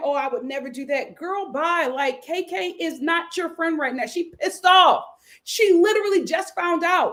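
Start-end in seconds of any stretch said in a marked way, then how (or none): 0.0-1.1 mock crying, quieter. Retelling what a crying contestant said: imitating someone crying. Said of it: "So she's crying".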